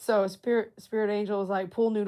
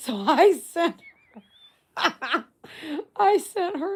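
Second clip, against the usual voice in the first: very slow, high, drawn-out talk through laughter; 8 semitones higher, 5 dB louder than usual. Telling viewers a story about a christmas gift, laughing while talking. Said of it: "I can't believe I'm laughing".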